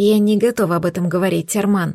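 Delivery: ordinary delivery, nothing marked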